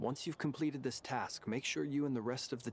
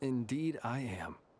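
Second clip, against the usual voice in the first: calm, level-headed, no feeling shown. Answering a furious speaker: calm, no emotion. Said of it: "Calm-headed, no emotion".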